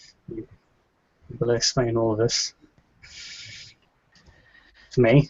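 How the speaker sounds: subdued, quiet, low-voiced delivery. Retelling what he said to someone, in a rather quiet and low voice. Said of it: "says in a rather quiet and low voice".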